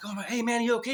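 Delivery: frightened, nervous tone. Retelling checking on a man he thought he had killed, acting out being scared. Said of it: "I was scared now".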